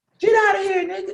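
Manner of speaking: very high-pitched voice, yelled.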